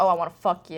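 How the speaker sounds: normal talking voice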